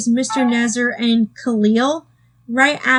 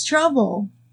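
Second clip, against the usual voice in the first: emphasis on the word 'trouble'. Reviewing the Larry Boy episode's villain introduction, emphasis on 'trouble'. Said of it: "emphasis on the word trouble".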